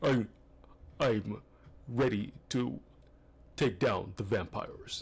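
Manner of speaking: put-on deep, low tough-guy character voice. Showing how his usual film character talks: put-on deep voice. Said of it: "with a deep voice like this".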